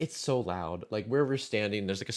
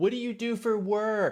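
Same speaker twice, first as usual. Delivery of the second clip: mock yelling, much higher and slower; 13 semitones higher than usual. Retelling chatting to a woman as the lights go off, retelling her own yell. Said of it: "I'm like yelling at her".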